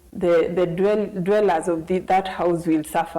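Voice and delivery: ordinary talk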